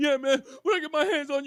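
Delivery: teary, worked-up, near-tearful, high and loud. Imitating someone in a fight, almost crying but wanting to fight: imitating an emotional, near-crying threat. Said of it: "it almost seems like they're crying".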